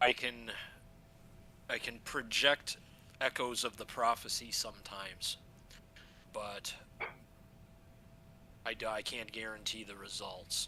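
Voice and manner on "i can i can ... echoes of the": usual speaking voice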